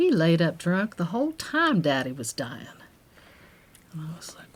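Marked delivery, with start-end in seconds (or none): 0.0-2.7 bad, put-on Kentucky accent, swooping pitch. Quoting Joanna telling her family story: bad Joanna Kentucky accent. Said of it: "excuse my bad Kentucky accent".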